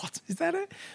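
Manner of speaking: high, soft, incredulous, disbelieving voice. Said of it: "I was like".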